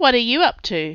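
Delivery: ordinary delivery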